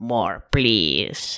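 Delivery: very deep, silly, goofy lizard voice. Speaker gives voice to the primitive lizard brain, in a lizard-brain voice. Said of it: "That was my lizard voice".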